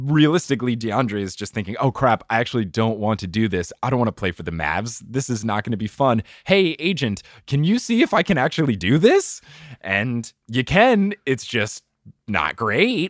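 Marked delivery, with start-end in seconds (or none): none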